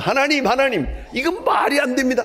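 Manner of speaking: high, loud shout. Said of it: "하고 소리를 질렀더니".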